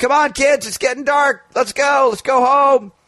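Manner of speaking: put-on very high shouted yell. Parent recounting calling the kids home from the playground, retelling a yell. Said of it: "I'm yelling".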